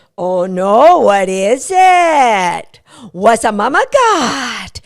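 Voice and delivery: slow, playful fun voice. Showing what to say to a dog while opening treats, really fun voice. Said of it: "saying in a really fun voice".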